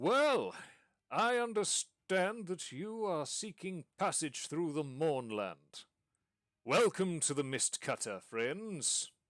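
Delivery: high, booming voice coming down from above. Calling down to arriving passengers in the ship's hold, booming Harbeck Mithrilbeard voice. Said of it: "you hear a voice booming down".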